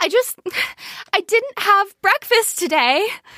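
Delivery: high voice on the verge of tears. Retelling what a host said on the verge of tears: imitating someone about to cry. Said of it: "about to cry and is like".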